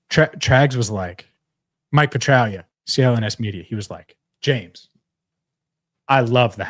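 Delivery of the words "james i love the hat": put-on completely straight, super serious, no joking. Retelling a colleague's compliment about the hat: imitating Trags, super serious. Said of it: "like, straight, like, super serious".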